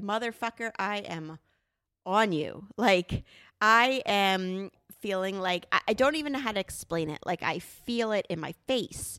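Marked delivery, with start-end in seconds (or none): none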